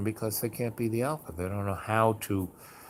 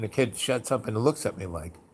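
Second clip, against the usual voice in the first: normal talking voice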